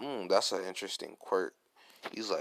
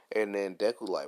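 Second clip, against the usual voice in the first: ordinary delivery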